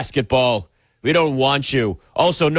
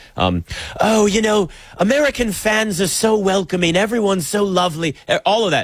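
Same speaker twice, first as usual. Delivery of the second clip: deliberately terrible put-on British accent; 4 semitones higher than usual. Speaker says they'll do a British accent the whole time, terrible British accent. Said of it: "I'm just going to do a British accent the whole time".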